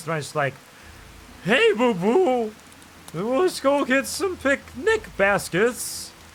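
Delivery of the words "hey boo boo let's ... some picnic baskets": stretched out slow and very high. Talking about his Yogi impression, the speaker demonstrates his Yogi Bear impression. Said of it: "don't make fun of my yogi impression".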